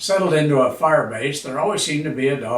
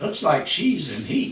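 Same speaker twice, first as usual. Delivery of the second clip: ordinary delivery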